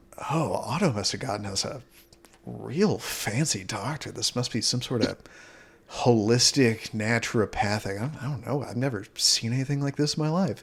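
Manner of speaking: grumbling, mumbled, muttered under breath. Game master voicing an unharmed guard reacting to the doctor, muttering under his breath. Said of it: "kind of mutter under his breath".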